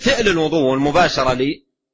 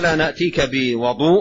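normal talking voice

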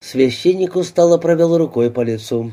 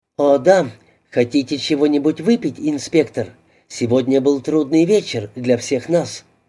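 plain

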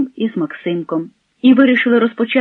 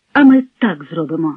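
usual speaking voice

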